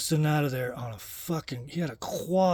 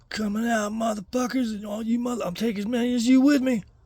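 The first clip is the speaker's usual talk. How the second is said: shrill, very high, loud yelling; 10 semitones higher, 6 dB louder than usual. Retelling a man shouting threats from a window: imitating someone shouting. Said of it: "you hear him shouting from the inside".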